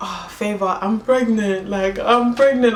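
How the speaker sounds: mock weeping through every word, slow and tearful. Retelling calling someone to say she was pregnant, retelling crying. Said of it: "I'm crying on the phone".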